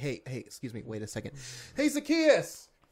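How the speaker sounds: acted, casual, nonchalant, sing-song drawn-out call. Acting out a call to Zacchaeus up in a tree: imitating a nonchalant call. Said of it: "Just imagine nonchalantly".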